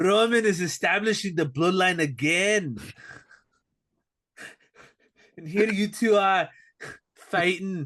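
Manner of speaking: put-on Scottish-or-Irish accent. Recapping a wrestling promo, acting out what Drew said as a Drew impression. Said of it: "I don't know if that's Irish or Scottish".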